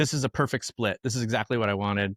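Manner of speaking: ordinary talk, nothing marked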